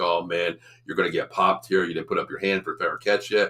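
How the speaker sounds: normal talking voice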